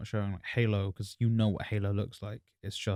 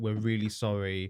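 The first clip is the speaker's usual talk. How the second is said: normal talking voice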